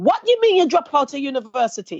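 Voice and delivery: put-on thick, broad Jamaican accent, swooping high. Quoting her mum's reply when told she dropped out of university, strongest Jamaican accent. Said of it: "in the strongest Jamaican accent".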